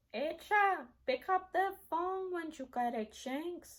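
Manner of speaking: heavy put-on Spanish accent.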